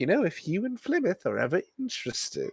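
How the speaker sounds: soft half-whisper pressed in close. A game master voices a woman leaning closer to a player's character: leaning-in half-whisper. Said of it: "gets kind of closer and whispers".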